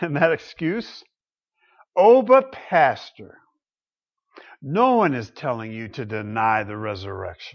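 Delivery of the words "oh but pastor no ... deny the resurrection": smug, patronizing, placating talking-down tone. Pastor quoting a critic's excuse, mocking a condescending tone. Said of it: "With very much a condescending tone".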